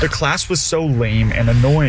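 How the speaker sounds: ordinary talk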